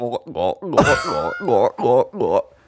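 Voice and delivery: mock vomiting sounds, gurgled like chugging water. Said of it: "it literally sounded like".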